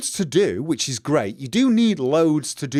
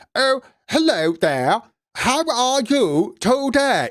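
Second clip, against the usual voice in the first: clumsy fake English accent, very high and very slow; 9 semitones higher than usual. Speaker mocks americans who try to do an english accent: bad fake english accent. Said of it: "Americans trying to do an English accent".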